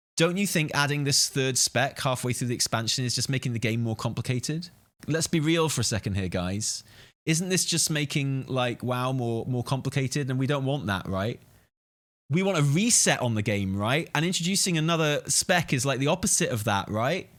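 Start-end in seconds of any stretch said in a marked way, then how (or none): none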